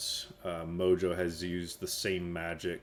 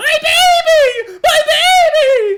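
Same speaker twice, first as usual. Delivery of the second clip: shrill, very loud, slow, drawn-out woman's scream; 23 dB louder than usual. Describing a kenku that mimics a woman's cry, imitating a woman screaming. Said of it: "sounds like a woman like screaming".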